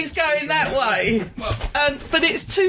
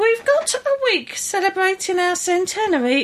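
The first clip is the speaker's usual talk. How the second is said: silly, goofy put-on voice, much higher pitched; 3 semitones higher than usual. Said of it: "Why are you putting on a silly voice?".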